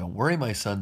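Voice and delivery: ordinary talk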